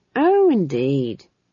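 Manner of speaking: happy, cheerful, glad tone. A Chamberlain answers the Duchess's question, happily. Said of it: "said the Chamberlain happily".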